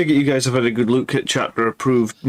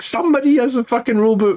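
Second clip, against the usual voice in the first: put-on shouting at the top of the voice, very high; 11 semitones higher than usual. Speaker retells shouting at a table for a rule book: retelling a shout. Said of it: "shouting at the top of my voice".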